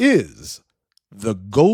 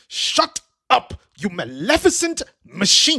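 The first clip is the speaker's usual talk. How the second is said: irritated, through clenched teeth, pitched up; 8 semitones higher than usual. Sir Hemmingsworth turns away to speak down into his pocket, clenched-teeth and irritated. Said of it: "in a clenched teeth and irritated tone".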